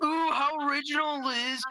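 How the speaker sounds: high, mocking, taunting put-down voice. Mocking someone's comeback in a mocking voice. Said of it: "A mocking voice mocking my comeback".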